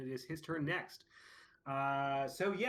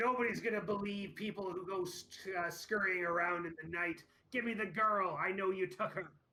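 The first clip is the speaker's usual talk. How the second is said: high-pitched voice calling out loudly; 5 semitones higher than usual. Narrating a scene, voicing a man heard from inside, yelling out. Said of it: "and he yells out".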